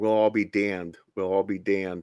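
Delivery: low, hushed half-whisper under the breath. Retelling a scene where a woman half-whispers to a man, retelling a half-whisper. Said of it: "she whispers in him".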